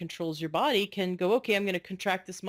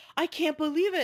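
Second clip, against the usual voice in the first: put-on, very high, half-shouted outburst; 9 semitones higher than usual. Retelling what a man said as he felt his temperature rise; retelling someone almost yelling. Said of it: "he started almost like yelling".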